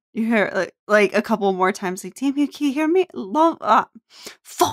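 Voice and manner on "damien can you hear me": fading voice, higher and faster. Retelling a voice calling out to damien, voice growing fainter. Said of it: "the voice starts to get fainter".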